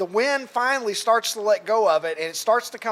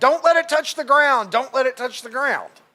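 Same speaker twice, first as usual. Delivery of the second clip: loud yell, said twice over; 4 semitones higher, 4 dB louder than usual. Retelling how a fan in a costume yelled about the flag: imitating a man yelling. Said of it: "The giant A starts yelling".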